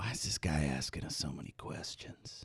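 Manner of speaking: hushed, breathy, barely voiced whisper. In a role-play, a character whispers to Ven about the man questioning them: whispering. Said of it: "I want to whisper to Ven".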